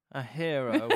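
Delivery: put-on talking through clenched teeth. Retelling a film scene's answer to a question: imitating talking through clenched teeth. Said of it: "you can see through clenched teeth".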